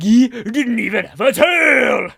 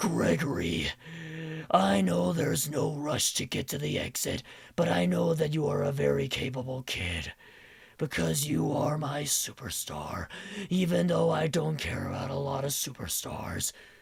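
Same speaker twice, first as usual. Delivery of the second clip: very quiet, hushed-down, breathy voice; 8 semitones lower, 15 dB quieter than usual. Voicing a character mashup, addressing a kid, as Glamrock Freddy crossed with Eeyore. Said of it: "Glamrock Freddy and Eeyore sound like together".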